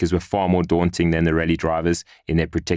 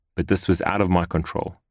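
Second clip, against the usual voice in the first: plain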